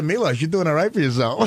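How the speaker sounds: ordinary talk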